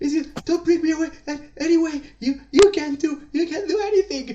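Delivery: very high, frantic, panicked gnome shriek. Voicing a gnome carried toward the town hall, screaming in panic. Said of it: "he keeps screaming and he goes like".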